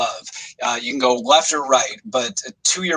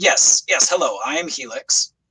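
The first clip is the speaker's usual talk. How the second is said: annoyed, strange otherworldly voice, neither male nor female. Narrating the scene, the speaker gives Helix's reply to the crew: irritable alien Helix voice. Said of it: "strangely alien, but it sounds uh, irritable, annoyed".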